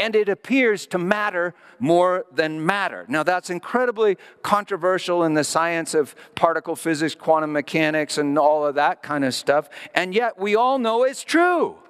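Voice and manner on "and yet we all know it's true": excited, fired-up yell rising high. Speaking to the audience, then apologizing for yelling again, yelling excitedly. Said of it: "I'm yelling again".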